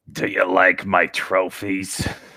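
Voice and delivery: put-on slithering smoker's villain voice. Playing a villain in the story, in a smoker villain voice. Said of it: "Just the smoker voice".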